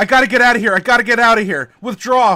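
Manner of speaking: top-of-the-lungs shouting, very loud and high. Recounting a scene where she marches over to Jack; retelling Jack's yell. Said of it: "and he's yelling".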